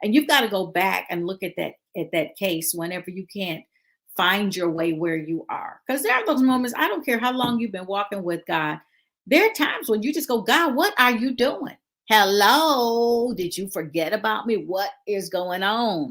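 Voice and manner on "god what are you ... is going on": put-on elderly woman voice, slow. Speaker acting out what believers say to God, in an old church lady voice. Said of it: "sound like a real old person now".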